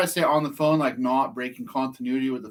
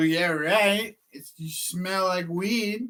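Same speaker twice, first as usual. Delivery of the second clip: put-on childish taunting voice, higher pitch; 5 semitones higher than usual. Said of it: "turned into, like, a twelve-year-old Frenchman".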